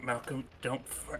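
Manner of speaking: soft, hushed whisper. Speaking privately to Malcolm during the scene: whispering. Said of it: "I'll just whisper to Malcolm".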